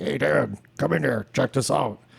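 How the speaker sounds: extremely gruff, rough-edged, creaky voice. Imitating the tattooer he apprenticed with, calling him in to look: crazy gruff voice. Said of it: "because he had like crazy gruff voice".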